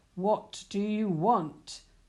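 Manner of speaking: loud, slow, growling ogre voice. Narrator reading the ogre's question to Puss, growled. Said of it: "the ogre growled".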